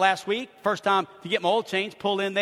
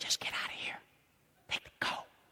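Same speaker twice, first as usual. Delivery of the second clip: soft, breathy, barely voiced whisper. Retelling words someone whispered while leaning over: imitating a whisper. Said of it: "he leans over and he whispers".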